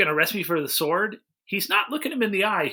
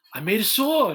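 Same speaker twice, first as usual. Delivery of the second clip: put-on incredulous actor voice. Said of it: "that might have been your best impression".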